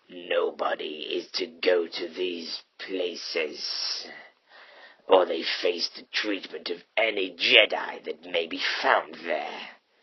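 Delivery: deep, raspy voice. A cloaked figure speaks in a story being read aloud; deep, raspy voice. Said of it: "[name] and the man who had now declared himself as an Imperial Inquisitor for the Galactic Empire, / revealing a pale and scarred face, with yellowed eyes and a cybernetic bottom jaw that was merely s".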